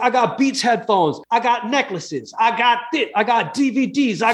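put-on high, slow Brooklyn-accented corner-store kid voice. Speaker retelling what a man said when they walked in, sounding like a kid in a bodega. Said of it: "he sounded like a kid in a bodega".

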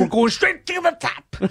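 high, slow, stretched-out drawl.

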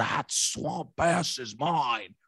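voice dropped deep and dragged out, done badly. Trying out a Shrek impression for the others: bad Shrek impression. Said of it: "I couldn't do a Shrek impression".

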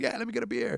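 very high, soft, stoned, mind-blown voice.

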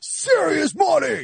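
put-on, very high-pitched, pumped-up sales hype-man voice. Mocking a friend who said serious money: imitating a friend's hype. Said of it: "he's like".

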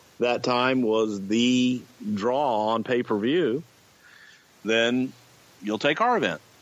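plain

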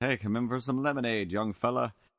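put-on very old lady voice. Riffing on an older lady inviting a young fella in; very old lady voice. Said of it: "sound like she's a 900-year-old lady".

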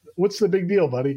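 plain

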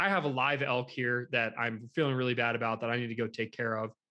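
usual speaking voice

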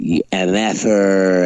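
plain

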